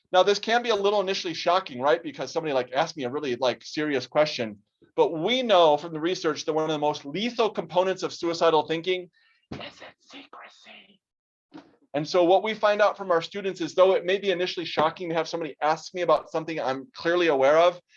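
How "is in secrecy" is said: very quiet, breathy whisper. Speaker advises listeners about asking their student, whispering.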